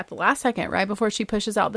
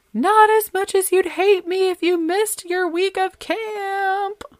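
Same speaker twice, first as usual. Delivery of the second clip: play-acted very high, loud hollering; 12 semitones higher, 5 dB louder than usual. Retelling a conflict before a drive to dinner, retold hollering after her. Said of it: "I hollered after her".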